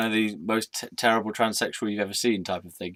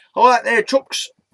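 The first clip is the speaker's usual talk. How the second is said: shrill, very loud put-on northern English accent; 14 semitones higher, 10 dB louder than usual. Speaker demonstrates an accent once used for a comedy character; northern English accent. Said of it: "just a northern type of accent".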